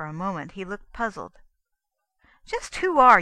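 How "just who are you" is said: raised, insistent, pressing, demanding voice. Douglas questions Copper, whom he does not recognize: demanded. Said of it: "he demanded".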